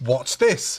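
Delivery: mock disgusted tone. Retelling a film character's line on meeting a creature: imitating a disgusted tone. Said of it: "he says in a disgusted way".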